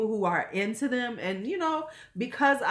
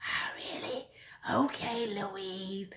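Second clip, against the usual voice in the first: whispered, breathy, very slow put-on voice; 9 dB quieter than usual. Quoting someone whose voice annoys the speaker, imitating how he talks. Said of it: "I have to speak in his voice".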